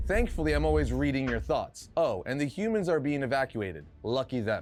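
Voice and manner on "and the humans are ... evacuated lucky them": normal talking voice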